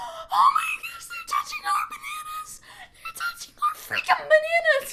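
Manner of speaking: put-on excited crying, very high-pitched. Retelling watching from the back row with a friend, imitating excited crying. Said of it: "I'm like crying".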